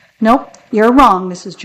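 usual speaking voice

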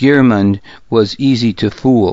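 ordinary delivery, nothing marked

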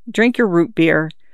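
plain

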